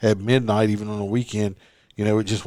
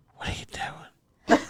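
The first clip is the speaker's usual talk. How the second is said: put-on whisper, quieter. Retelling his nephew's sneaky FaceTime calls, whispering like Valentino.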